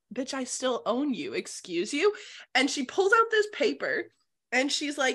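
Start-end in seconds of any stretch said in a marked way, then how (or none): 0.2-2.2 irritated, flustered, indignant tone. Retelling a story, the speaker acts out a man's reply to a woman; mock-pissed and flustered. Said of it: "he's all pissed and flustered".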